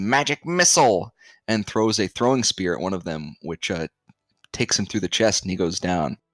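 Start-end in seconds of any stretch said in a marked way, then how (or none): 0.0-1.1 shrill, very loud, top-of-the-lungs screech. Narrating a large fighter facing three opponents as the bell rings, screeching at the top of lungs. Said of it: "he screeches at the top of his lungs".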